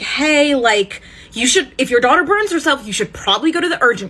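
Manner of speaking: fast nervous chatter with laughter running through the words. Retelling what another person said on a livestream: imitating a nervous laugh while talking. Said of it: "Max starts nervously laughing and he's like".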